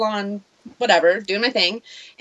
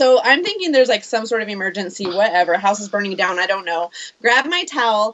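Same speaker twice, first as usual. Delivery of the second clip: ordinary talk, nothing marked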